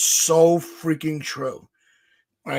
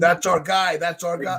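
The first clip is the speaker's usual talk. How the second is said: ordinary talk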